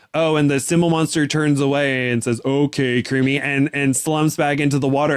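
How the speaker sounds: ordinary delivery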